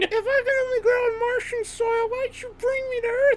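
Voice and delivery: very high, squeaky tiny plant voice. Speaker does the voice of Riley, the little plant: Riley the little plant voice. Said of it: "that was me doing the voice of Riley, the little plant".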